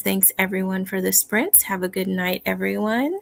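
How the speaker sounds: ordinary delivery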